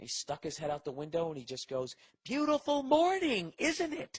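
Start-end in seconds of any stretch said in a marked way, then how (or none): 2.2-4.2 mock very high, slow, drawn-out, sarcastic yell. Retelling what the old neighbor shouted from his window: imitating a neighbor yelling sarcastically. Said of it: "Why is he yelling with that twisted up look".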